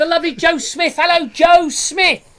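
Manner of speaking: very high, loud, thrilled, excited shouting. Host reading out viewer names, greeting one with excited shouting. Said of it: "Sorry, I'm shouting. I was excited".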